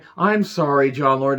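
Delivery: dripping, heavy sarcasm. Speaker recounting what someone said, retelling a sarcastic apology. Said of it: "dripping in so much sarcasm".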